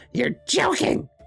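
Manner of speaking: sharp, shrill, piercing outburst, let out thin. From far off in a cavern, the small kobold companion calls out, Gum Gum's shrill cry. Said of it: "a shrill".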